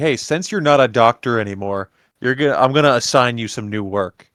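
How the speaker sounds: put-on passive-aggressive delivery. Retelling a character assigning someone new work: imitating passive-aggressive tone. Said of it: "passive aggressively".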